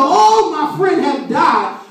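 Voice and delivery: slow, drawn-out mock wail.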